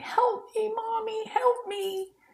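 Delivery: mock very high, drawn-out, sobbing little-kid cry. Retelling a daughter crying for help at two in the morning: imitating a crying child. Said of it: "She's crying and".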